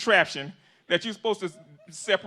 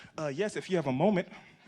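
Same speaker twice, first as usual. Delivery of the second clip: acted extra-kind politeness, quieter; 5 semitones lower, 6 dB quieter than usual. Acting out his own order at a drive-through, mock-courteous. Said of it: "I'm so kind and courteous".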